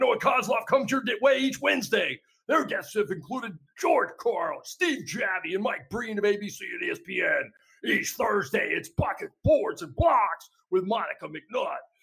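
put-on, high tractor pull announcer voice. Reading promos for the network's shows, in a tractor pull announcer voice. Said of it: "this tractor pull announcer voice".

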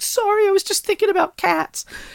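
sobbing, squeaky, very high tearful crying voice. Retelling an old joke dating video, imitating the woman crying. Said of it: "and then she starts crying".

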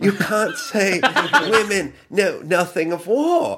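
high, slow fake English accent through a laugh.

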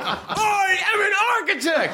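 very high, laughing, mock yell.

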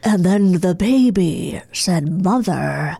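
low, very slow, drawn out creepy drawl. Asked by the other speaker to do James Spader: James Spader impression. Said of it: "Now let's hear your James Spader".

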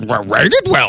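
fake small alien wise-one voice. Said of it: "it talks like Yoda".

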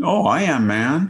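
put-on thick Chinese accent. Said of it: "she had a very thick Chinese accent".

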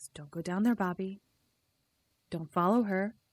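haunting, spooky ghost voice. Retelling a scene where a ghost warns a boy: ghost voice. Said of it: "a second ghost voice that says".

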